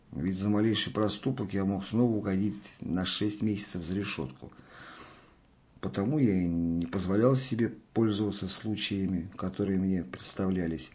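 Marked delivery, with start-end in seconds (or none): none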